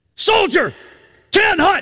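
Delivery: put-on drill sergeant yelling. Imitating a drill sergeant calling from behind in an airport: imitating a drill sergeant's command. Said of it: "heard your drill sergeant come up behind you and say".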